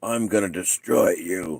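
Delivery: guttural threatening voice. Retelling what someone standing over him said, in a very guttural voice. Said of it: "in a very guttural voice said".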